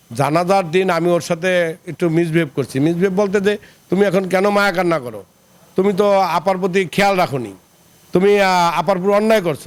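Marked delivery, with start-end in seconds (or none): none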